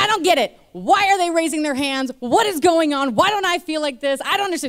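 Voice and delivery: high yelling. Speaker recounts sitting with a guy named Chris Campbell, retelling their own yelling. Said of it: "just yelling at him".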